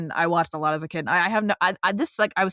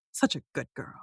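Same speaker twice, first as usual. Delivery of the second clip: hushed, soft, breathy villain voice; 5 semitones lower, 7 dB quieter than usual. Describing a season-two scene, quoting how it ends, as a Cora impression. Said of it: "it ends with Cora going".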